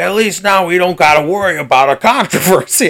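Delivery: put-on full-on, thick local Chicago accent. Quoting a guy from local Bears talking points, in a thick Chicago accent. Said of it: "in the most Chicago accent".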